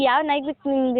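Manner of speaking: plain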